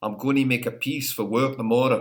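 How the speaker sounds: attempted put-on Scottish accent. Speaker tries an accent for the other host, attempted scottish accent. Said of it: "I'll try and embarrass myself with the Scottish accent".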